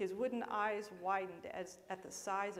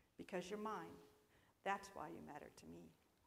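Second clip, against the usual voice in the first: spoken very softly, hushed; 8 dB quieter than usual. A maker answers the small wooden figure he made, speaking very softly. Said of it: "spoke very softly".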